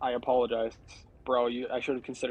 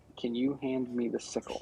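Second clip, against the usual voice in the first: soft, hushed whisper; 5 dB quieter than usual. Leaning over to Vico with a couple of guys nearby: whispering. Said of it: "I'm gonna whisper".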